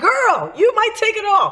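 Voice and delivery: high, hyped-up cheer. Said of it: "And then I was like".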